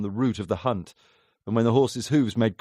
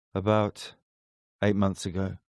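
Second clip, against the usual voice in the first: detached, faraway, flat, distant monotone; 3 semitones lower, 3 dB quieter than usual. A man answers a questioner's question, in a flat, distant voice. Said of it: "he said in a flat, distant voice".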